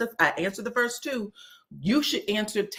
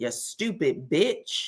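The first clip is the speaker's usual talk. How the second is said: put-on muttering under breath, lower pitch; 5 semitones lower than usual. Retelling an insult said in a confessional: imitating muttering under breath. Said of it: "And then under her breath".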